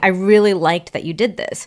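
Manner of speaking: plain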